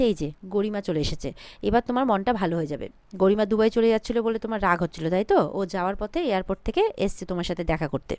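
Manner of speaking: plain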